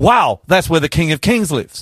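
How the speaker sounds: ordinary delivery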